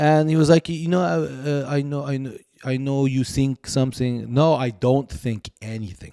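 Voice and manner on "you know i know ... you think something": put-on French accent, much quieter. Retelling what a man said after seeing the speaker at a restaurant, French accent. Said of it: "he has a French accent".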